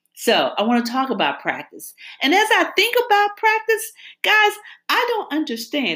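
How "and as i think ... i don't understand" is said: voice suddenly jumps into a high soprano. A speaker telling the group about practice, voice jumping to soprano. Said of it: "There's my soprano voice".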